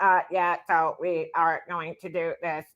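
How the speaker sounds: flat, robotic monotone like a robot. Describing how Doug talks like a robot, Doug robot voice. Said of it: "Doug talks like a robot. He's like".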